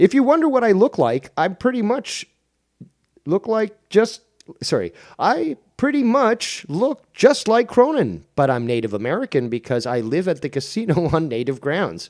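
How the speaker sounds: put-on very high, swooping neon robot voice. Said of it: "Hopefully I'm doing a good voice of Paxi".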